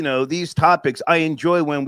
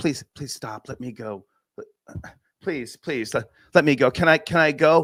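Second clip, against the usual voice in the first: put-on imploring, begging, pleading voice. Retelling a video of someone pinned against a wall: imitating a pleading put-on voice.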